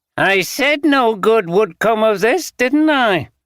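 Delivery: high, whiny, complaining tone. A man, unimpressed by the stress Green is under, speaks in a whining voice. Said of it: "he said in a whining voice".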